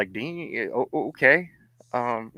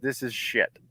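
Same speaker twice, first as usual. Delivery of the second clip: mock breathy whisper, utterly unimpressed and dismissive; 7 dB quieter than usual. Retelling a comics editor's first words: imitating an unimpressed editor. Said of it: "he looks at me dead in the eye, just with this completely unimpressed look".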